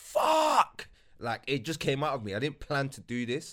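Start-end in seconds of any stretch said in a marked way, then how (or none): 0.0-0.9 shrill, very high, full-volume involuntary scream. Speaker recalls being alone at home when it was announced, retelling a scream. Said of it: "I just screamed".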